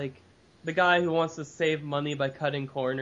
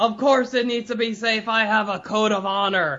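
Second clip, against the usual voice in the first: sudden high-pitched, loud shouted yell; 7 semitones higher, 7 dB louder than usual. Recapping a scene where a character answers the others; retelling John's yell. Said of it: "He turns to them and yells".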